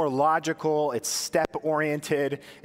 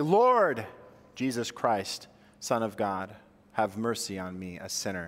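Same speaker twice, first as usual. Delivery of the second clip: heavy stress landing on Lord; 6 semitones lower, 3 dB quieter than usual. Saying a prayer with emphasis on a different word each time: stress on Lord. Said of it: "The emphasis being on Lord".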